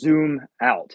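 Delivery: play-acted big, thundering, booming voice. Retelling how a voice answered repeated questions: imitating a thundering voice. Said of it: "with this like thundering voice".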